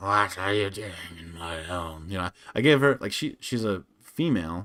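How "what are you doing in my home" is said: put-on masculine-sounding old hag voice. Recounting voicing a hag who finds intruders in her home, masculine Baba Yaga voice. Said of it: "I gave her a very masculine voice".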